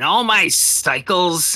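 distant shrill cackle. A voice calls out from the distance: high piercing cackling voice. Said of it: "a little high, a little far, but still piercing through the air with a cackle".

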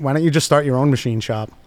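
normal talking voice

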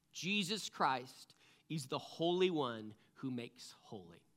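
read slowly.

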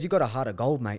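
put-on Aussie accent. Retelling what police officers told him, australian accent. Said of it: "his voice went Aussie when he said that".

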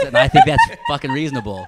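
high, loud squeal through laughter.

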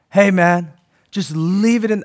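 laid-back, chilled-out hippie voice. Mocking a lame comforting phrase, speaker says it sounding like a hippie. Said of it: "I sound like a hippie".

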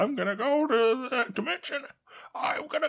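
very high-pitched character voice. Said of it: "I can't do it now".

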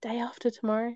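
half-whispered, hushed, under the breath. Recalling a film trailer seen at the cinema, naming the film: half-whispered. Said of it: "I have to whisper it".

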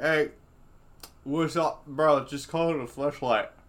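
talking with mouth full. Acting out a dude naming the product: imitating a dude eating chips. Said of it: "And he's, like, eating chips".

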